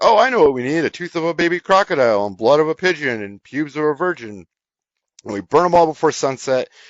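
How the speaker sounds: high, heavily super sarcastic, fake brightness. Recounting an actor's scene to a listener, retelling a super sarcastic line. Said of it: "but like super sarcastic of like".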